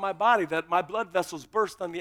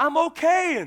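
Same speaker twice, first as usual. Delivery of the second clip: play-acted, loud, high-pitched yell; 9 semitones higher, 6 dB louder than usual. Recounting being pulled out from under a car, yelling to the men: retelling a yell. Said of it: "and I'm yelling to those guys".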